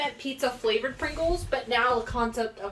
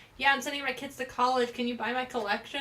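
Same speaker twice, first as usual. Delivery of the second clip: usual speaking voice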